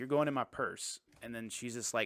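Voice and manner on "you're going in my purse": normal talking voice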